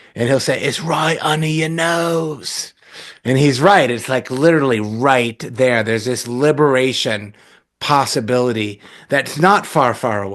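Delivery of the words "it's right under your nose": broad, thick put-on English accent, "nose" drawn out. Quoting a meditation teacher's joking line: imitating a thick english accent. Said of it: "really thick, uh, English accent".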